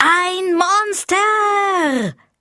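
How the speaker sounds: very high shriek, monster stretched long. Wilma stands in the middle of the stall and takes a deep breath, screaming. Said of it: "holte tief Luft und schrie".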